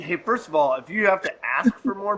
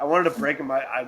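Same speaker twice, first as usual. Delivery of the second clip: ordinary talk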